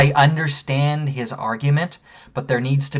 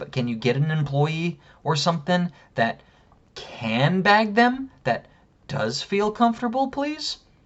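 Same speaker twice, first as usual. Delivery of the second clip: put-on patronizing, talking-down, overly polite "please"; 4 semitones higher, 3 dB quieter than usual. Retelling what the speaker told him after asking for an employee, retelling a condescending request. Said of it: "I said it just like that. Very condescending".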